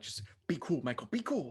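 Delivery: speaking in a hush. Speaking in character during a dragon scene, in a hushed tone. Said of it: "in a hushed tone".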